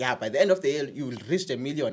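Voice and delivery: ordinary talk, nothing marked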